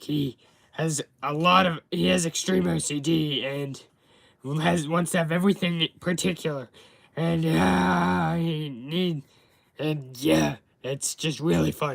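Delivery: cartoon character voice with drawn-out uh. Demonstrating the character he voices in his videos: Clawfuzz voice. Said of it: "this is what he sounds like".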